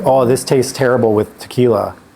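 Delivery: ordinary talk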